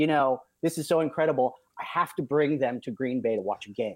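ordinary talk

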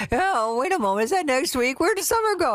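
put-on high-pitched older woman voice. Announcer promoting a sweepstakes signup deadline, imitating an old mom. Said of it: "Don't I sound like your old mom?".

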